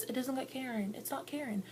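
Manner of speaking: soft, high-pitched, dismissive tone.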